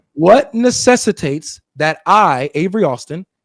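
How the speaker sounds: slow, drawn-out speech.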